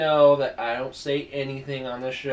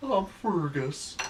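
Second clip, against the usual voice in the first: put-on dog voice, higher and quieter; 4 semitones higher, 5 dB quieter than usual. Voicing the other speaker's dog while he tells it to lie down: Fergus the dog's voice. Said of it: "Give him that voice".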